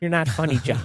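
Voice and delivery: unamused scolding voice. Retelling what his mom said about a photo, imitating his mom. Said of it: "Your mom's voice sounds very different".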